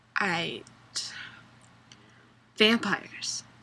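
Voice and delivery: put-on emotionless, incoherent talking. Imitating how an actress talks, with no emotion and in incoherent sentences: Kristen Stewart impression. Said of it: "she talks like this".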